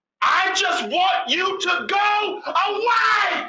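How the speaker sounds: very high scream at full lung. Recounting a man yelling from behind them, retelling a man's shout. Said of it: "at the top of this man's lung".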